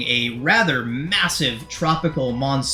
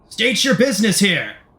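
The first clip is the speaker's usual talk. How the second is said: calling out, pitched high; 7 semitones higher, 3 dB louder than usual. Narrating a scene where a guard hails the arriving group, calling out. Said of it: "a guard calls out to you all".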